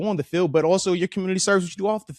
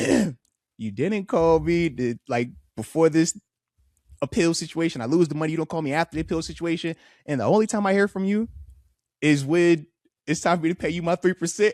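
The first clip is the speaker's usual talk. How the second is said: usual speaking voice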